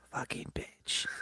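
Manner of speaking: hushed, soft whisper under the breath. Retelling a child repeating a swear word, imitating someone saying it quieter. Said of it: "she said it quieter".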